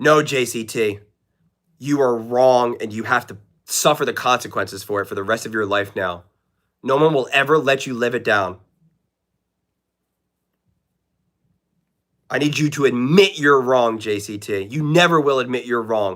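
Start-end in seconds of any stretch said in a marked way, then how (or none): 1.8-16.2 tongue-in-cheek, sarcastic and ironic delivery. Teasing someone in chat about being wrong, sarcastic. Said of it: "I am being sarcastic".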